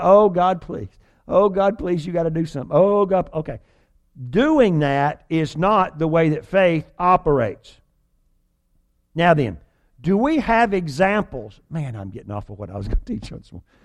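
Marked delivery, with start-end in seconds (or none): 0.0-3.6 imitated, desperate begging, acted out. Teaching on faith, acting out someone begging god, mock-pleading. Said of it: "and you just begged God and begged".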